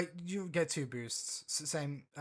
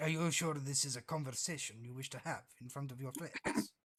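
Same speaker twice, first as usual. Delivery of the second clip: very low, secretive, conspiratorial murmur; 6 dB quieter than usual. Leaning in to the one asking about robes, in a very low conspiratorial voice. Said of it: "lean in conspiratorially in a very low voice".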